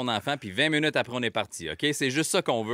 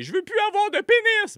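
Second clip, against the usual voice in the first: put-on shrill, very high, loud child's shout; 6 dB louder than usual. A dad recounts his three-year-old suddenly crying out at a restaurant: retelling a toddler's shout. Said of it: "il se m'a crié".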